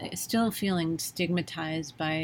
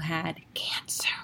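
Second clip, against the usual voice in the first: put-on whispered word. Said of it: "hear me whispering that".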